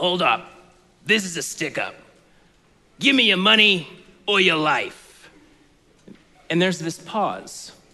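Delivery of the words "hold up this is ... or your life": put-on gruff-sounding voice. Retelling the radio sketch's robber demanding money: gruff-sounding voice. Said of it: "this gruff-sounding person go".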